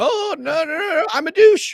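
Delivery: high, loud, very slow drawled delivery. Doing an impression from a famous clip after being asked: Pomp impression. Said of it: "That was my pomp impression".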